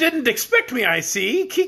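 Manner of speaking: speaking through laughter. A character arrives unannounced and greets the others in a laughing voice. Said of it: "the laughing noise made me cough".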